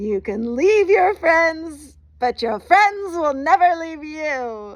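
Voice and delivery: full-volume, high-pitched scream, "you" stretched. Retelling a friend popping out of the back of a van: imitating Brendan screaming. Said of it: "he screams".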